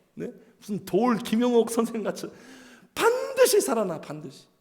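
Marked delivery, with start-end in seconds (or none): 3.0-4.5 confident, certain, swooping intonation on 반드시. Showing the intonation that comes out of certainty: strongly confident intonation. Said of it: "확신에 차니까 이런 억양이 나오는 거예요".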